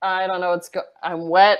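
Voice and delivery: out-of-it, dazed, stumbling, befuddled words. Playing a character with complete amnesia pulling out of water: dazed in character. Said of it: "I'm kinda dazed".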